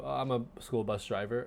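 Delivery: put-on soft-spoken voice, lacking confidence. Discussing an episode, act out a school bus driver, imitating Milton, very soft-spoken and unsure. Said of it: "very soft spoken, almost unsure of himself".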